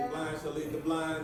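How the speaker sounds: ordinary delivery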